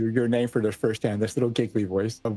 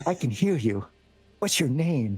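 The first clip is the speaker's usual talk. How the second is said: put-on high, girlish little voice, full of giggles; 4 semitones higher than usual. Speaker acts out a little voice heard on a ship, giggly little voice. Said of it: "more giggly".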